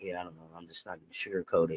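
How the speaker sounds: very quiet, barely audible, defeated, beaten-down murmur. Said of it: "the leadership looked broke already".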